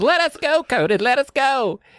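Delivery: put-on very high, shrill, frightened children shrieking. Retelling kids screaming at a bully: imitating kids screaming. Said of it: "they're screaming".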